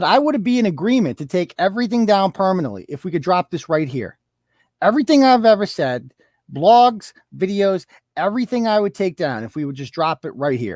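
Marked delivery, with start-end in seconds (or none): none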